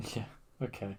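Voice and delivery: defeated, resigned, barely whispered. Answering a co-speaker who hears the reply as sounding defeated. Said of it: "you sound defeated".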